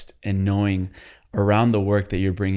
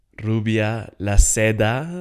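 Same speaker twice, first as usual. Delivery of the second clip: put-on Brazilian Portuguese accent; 2 semitones higher, 3 dB louder than usual. A host introduces a guest's name in a Brazilian Portuguese accent. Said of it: "That's my best Portuguese Brazilian accent".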